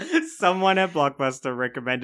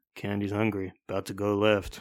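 mock mutter under breath, much lower pitch; 4 semitones lower than usual. Retelling what another woman said under her breath: retelling a mutter under breath. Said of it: "under her breath".

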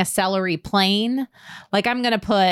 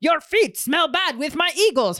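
pitched-up comic character voice, playing up the silliness; 8 semitones higher than usual. Retelling the character's random English translation: Pierre Escargot impression. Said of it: "It'd be like".

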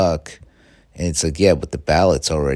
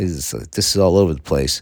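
plain

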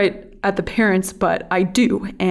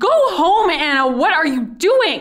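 put-on yell, very high-pitched and loud; 9 semitones higher than usual. Retelling a coworker yelling at the speaker: imitating someone yelling. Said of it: "he's yelling".

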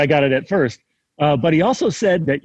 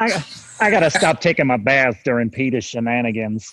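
deep cartoon character voice; 4 semitones lower than usual. After warming up the vocal cords, doing a Cleveland Brown voice. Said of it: "I do what I think is a really good Cleveland Brown from Family Guy".

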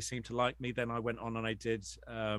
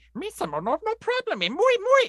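goofy put-on alien voice, much higher pitch; 12 dB louder than usual. Interviewee taking up a Gungan-off challenge, Jar Jar Binks Gungan voice. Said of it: "challenge you to a Gungan off".

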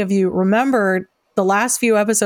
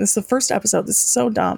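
talking through tears, crying through the words. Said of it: "why am I crying?".

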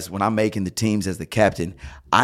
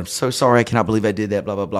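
embarrassed, flustered, nervous, fumbling voice. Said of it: "flustered, that is the word".

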